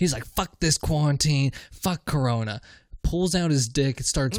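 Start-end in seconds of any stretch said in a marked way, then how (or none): 0.2-2.6 furious, angry ranting outburst. Retelling how a man on the bus flipped out: imitating a furious outburst. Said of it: "the homeless guy flips the fuck out".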